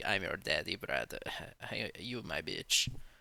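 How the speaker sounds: whispered, breathy, taunting boast. Retelling press conference trash talk in a Hamzat impression. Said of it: "how am I gonna do a Hamzat impression?".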